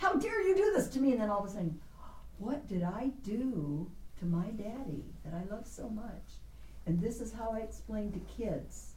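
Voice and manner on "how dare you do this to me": mock, very high-pitched shrieked indignation. Speaker recalls being spanked by their father as a child, retelling a scream. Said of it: "I'm screaming".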